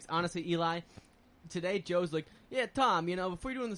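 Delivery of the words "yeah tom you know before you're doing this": put-on Italian-accented voice. Retelling what Joe said to Tom earlier today, Joe in Italian accent. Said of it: "I just did the Italian voice for Joe".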